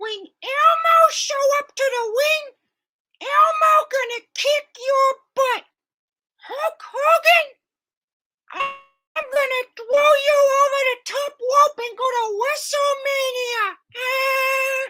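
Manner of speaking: very high put-on voice, drawn-out eh sound. Doing a puppet impression taunting a wrestler: Elmo voice. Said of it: "And Elmo".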